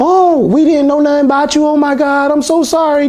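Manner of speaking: tearful, very high sobbing, crying wail. Retelling the auntie meeting the speaker for the first time: imitating the auntie crying. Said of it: "She crying".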